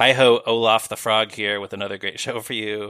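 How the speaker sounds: ordinary delivery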